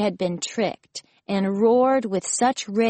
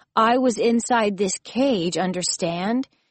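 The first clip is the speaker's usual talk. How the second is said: ordinary delivery, nothing marked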